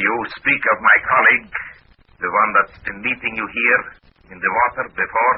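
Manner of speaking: attempted Russian accent. In a roleplay, answering a question about a colleague, in a russian accent. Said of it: "in my best Russian accent".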